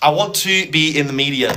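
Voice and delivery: ordinary talk, nothing marked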